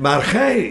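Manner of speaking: gij hit hard and set apart. Reading a Bible verse aloud the way it should be read: stress on gij. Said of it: "zo moet je hem ook lezen met die klemtoon".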